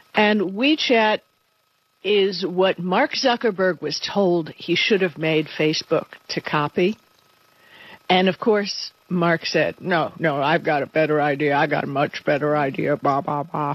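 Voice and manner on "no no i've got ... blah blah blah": put-on Texas accent. Retelling what Mark Zuckerberg said about copying WeChat: imitating Mark Zuckerberg in a Texas accent. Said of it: "I didn't know he spoke in a Texas accent".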